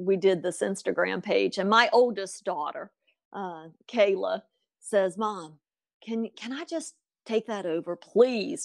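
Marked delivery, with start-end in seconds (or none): 5.2-8.6 acted pleading, begging voice. A mother retells her oldest daughter's request, imitating her begging. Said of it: "she was begging".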